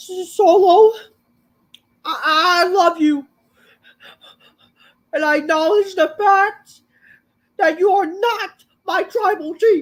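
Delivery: very high, loud, sobbing, tearful crying voice. Retelling a wrestling segment, imitating Paul Heyman crying. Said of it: "fucking crying".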